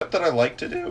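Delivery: voice cracks and breaks partway through the line. Explaining a cooking step on camera when the voice cracks: voice cracking. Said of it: "I voice cracked".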